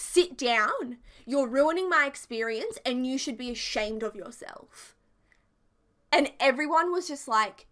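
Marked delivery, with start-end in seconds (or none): 0.0-4.9 put-on irritable, cranky, scolding tone. Retelling what Janice said to the speaker's dad: imitating Janice speaking loudly. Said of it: "very loudly said to him".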